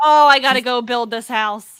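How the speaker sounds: put-on loud, drawn-out griping complaint. Retelling how another speaker complains while playing: imitating someone complaining. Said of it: "where you complain".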